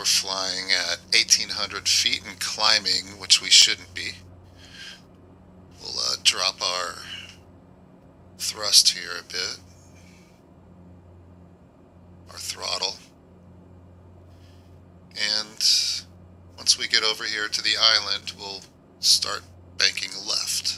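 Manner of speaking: voice modulator effect. Testing a voice mod while flying, speaking as the captain: voice modulator effect. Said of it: "I'm going to turn the voice modulator off".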